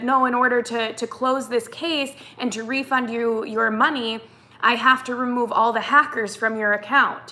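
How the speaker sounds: ordinary talk, nothing marked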